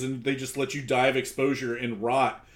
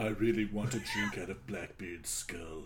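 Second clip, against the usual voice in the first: very quiet, low, hushed, poorly done goth voice; 5 semitones lower, 10 dB quieter than usual. Imagining a goth kid listening to the Blackbeard skull story: put-on goth voice. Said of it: "That's my goth voice".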